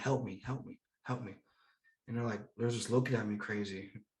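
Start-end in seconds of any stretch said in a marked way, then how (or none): 0.0-1.3 hushed, pleading whisper. Retelling being zip-tied in a wheelchair among people, retelling a whisper. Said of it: "I'm like whispering to people like".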